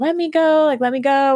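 play-acted angry yelling, high and drawn out. Retelling a fight while being held from behind: imitating own yelling. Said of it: "I'm just, like, yelling".

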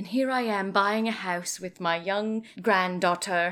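thick, heavy put-on British accent. Complaining about a movie character who has moved on: Lori in a British accent. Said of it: "I'm giving her a British accent".

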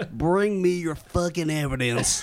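put-on cowboy accent. Trying an accent you can't quite pin down: old western accent. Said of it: "I'm like 19th century fucking tombstone".

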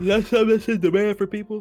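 talking through a yawn. Reacting to a news item read by another speaker, talking through a yawn. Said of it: "Sorry, I was yawning".

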